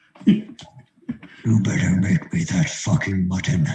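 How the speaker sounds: hushed whisper. Shaking a man's hand and leaning in to whisper a demand, whispering. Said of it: "lean in and whisper".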